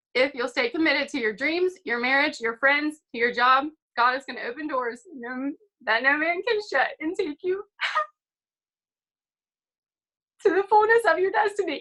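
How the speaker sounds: crying while speaking. Speaker delivering an encouraging message to listeners, crying while speaking. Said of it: "I'm crying".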